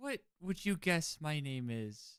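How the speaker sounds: put-on drunk-sounding talk. A party host in a game who can't recall guests' names, acting drunk. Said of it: "I have clearly had too much to drink already".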